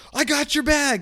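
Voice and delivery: very high, loud shouted call. Telling a story, the speaker acts out a stranger yelling while running at them; retelling someone's yell. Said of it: "sticks up his arms and waves them and yells".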